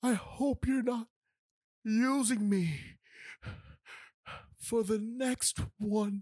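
slow, tearful, close to tears, words held back. Retelling what a woman said while looking at Josh: imitating her welling up. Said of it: "She was welling up".

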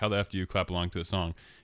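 normal talking voice

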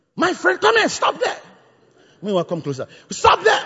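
mock shouting, pitched very high. Retelling how Yemisi reacted after a man's spit hit her face, imitating Yemisi shouting. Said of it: "she started shouting there".

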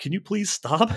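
mock, very high-pitched yelling. Retelling yelling at the tv during a replay: imitating own yelling at the tv. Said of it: "I'm yelling at the T V".

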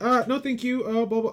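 acted, fumbling, stammering, squeaky very high, awkward polite tone. Imitating an actor's character turning someone away: imitating stuttering polite refusal. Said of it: "The very kind of stuttering, trying to be polite".

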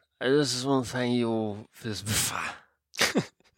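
put-on slow, really drunk, sloshed slurring. Showing how you'd accept a bafta award, sounding really drunk. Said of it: "if you're really drunk".

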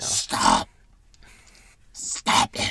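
rough, loud, creaky plant-creature voice. Podcast co-host cutting in on another host, in a plant voice. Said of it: "Is that your plant voice?".

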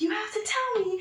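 shrill, very high, put-on scream. Recounting being screamed at while in neck pain, imitating someone screaming. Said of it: "she starts screaming at me".

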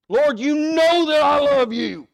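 put-on, very high, very loud, hurt, exasperated outburst. Retelling Peter's answer on being asked a third time: Peter upset, acted out. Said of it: "Peter's kind of upset with it".

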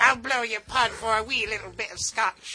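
put-on Irish pirate voice. Acting out a Pirish chick character: Irish pirate voice. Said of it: "a bunch of nude Pirish chicks".

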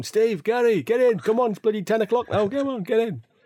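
acted, very high-pitched calling holler. Recalling being called in from the park at night, imitating dad shouting. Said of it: "You could hear him shouting".

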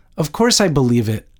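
ordinary delivery, nothing marked

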